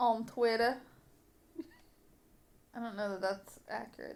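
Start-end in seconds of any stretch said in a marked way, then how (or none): 0.0-0.8 put-on Louisiana accent, Southern gangster voice, louder. Listing where to find the podcast: Southern gangster voice.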